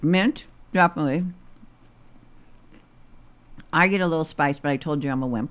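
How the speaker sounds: speaking with mouth full. Trying a mint the other speaker designed, talking while chewing. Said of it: "I'm still chewing".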